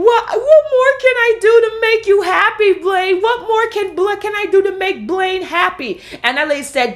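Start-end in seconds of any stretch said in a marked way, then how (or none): 0.0-6.0 put-on very high, manipulative fake crying and sobbing. Retelling a scene where Lindsay pleads with Blaine: imitating Lindsay's manipulative crying. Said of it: "manipulative cry, crying like Joy Nomi".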